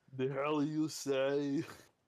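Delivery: rough put-on Austrian accent, very slow and loud. Asked to say a line in an Arnold accent. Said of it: "Now say that in an Arnold accent".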